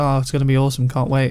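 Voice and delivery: ordinary talk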